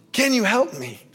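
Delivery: impassioned, urgent, pleading tone. Retelling asking a family member for help during a fire: imitating own impassioned plea. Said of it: "with an impassioned plea".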